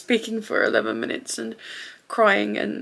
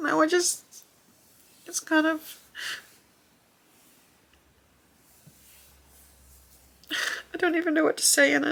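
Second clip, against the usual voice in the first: talking through tears, crying, pitched-up tearful voice; 7 semitones higher than usual. Speaker at a loss for words after the last thing wrapped up, crying. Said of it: "I'm crying again, so I'm sorry".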